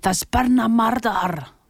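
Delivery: put-on Scottish accent. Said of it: "Hence my excellent".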